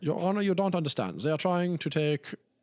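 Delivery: put-on German accent. Acting out a clothing-empire owner pleading with the judge, german accent. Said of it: "It's German".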